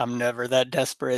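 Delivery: muttering under breath. Recounting what a woman said under her breath, retelling a mutter under breath. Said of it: "under her breath".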